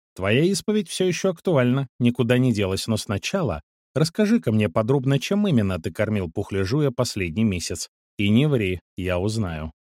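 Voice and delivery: plain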